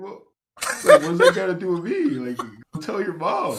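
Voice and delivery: put-on high, loud, flabbergasted, baffled disbelief. Retelling how Ray answered a kid wanting his Roblox: acting out Ray's bafflement. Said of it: "He's kind of flabbergasted".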